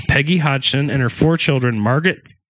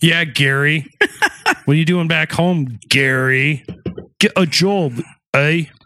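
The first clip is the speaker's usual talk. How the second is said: bad, failed, half-committed fake British accent. Heckling the neighbours' twenty-year-old son, in a bad British accent. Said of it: "That's what happens when I try to do a British accent".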